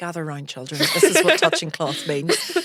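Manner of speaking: play-acted condescending, patronizing, talking-down tone. Retelling how they once explained the phrase to everyone: imitating own patronizing tone. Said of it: "very sort of patronizingly sat you all down".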